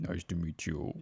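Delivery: put-on low, soft boyish voice.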